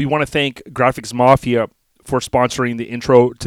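ordinary talk, nothing marked

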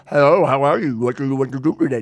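speech with tongue on palate. Demonstrating a voice made with the tongue on the roof of the mouth. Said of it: "put the tongue on the top of your roof of your mouth".

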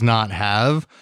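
"not have" set off in audible air quotes.

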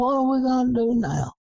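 very high, loud, carrying holler. Retelling a night hunt where a guy hollered across the river: imitating someone hollering loudly. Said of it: "holler out real loud".

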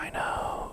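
hushed, confiding whisper under the breath. Retelling a brother's quiet reply in a film scene: imitating a whisper. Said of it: "He kinda whispers it under his breath".

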